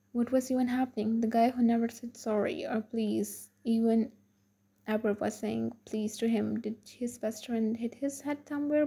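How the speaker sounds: ordinary delivery, nothing marked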